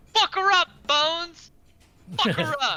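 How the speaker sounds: yelling at the top of the lungs, roaring. Player's character shouts to bones at the start of bones's turn, at top of lungs. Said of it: "shout at the top of my lungs".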